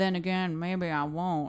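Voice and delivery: low film noir detective voice. Picturing his little inner monologues out loud, in a film noir detective voice. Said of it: "a film noir detective voice".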